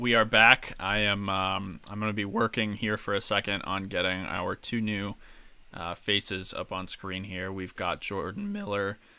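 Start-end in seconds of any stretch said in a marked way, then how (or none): 7.5-8.9 cracking, breaking voice. A host bringing two new guests on screen: voice cracks. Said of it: "Excuse the voice crack there".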